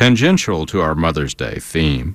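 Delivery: ordinary delivery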